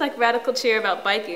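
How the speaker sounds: ordinary talk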